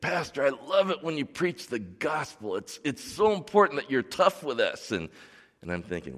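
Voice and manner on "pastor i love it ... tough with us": tearful, gushing, teary, pitched-up voice. Pastor retells what a man told him after sermons, imitating a teary man. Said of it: "with a tear in his eye".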